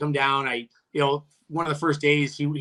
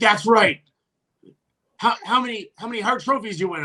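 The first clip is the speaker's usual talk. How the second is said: put-on angry yelling, much higher; 8 semitones higher than usual. Retelling how someone yelled at him during practice; retelling an angry yell. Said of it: "he's like yelling at me".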